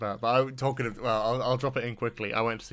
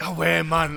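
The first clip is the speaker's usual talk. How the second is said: put-on Geordie outburst, higher and louder; 6 semitones higher, 7 dB louder than usual. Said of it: "the accent slips more Geordie".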